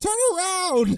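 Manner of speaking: very high, loud shouted yell. Retelling how one character yells at another: imitating a yell. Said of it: "he's yelling at him".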